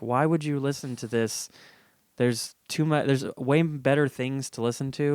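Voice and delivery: ordinary talk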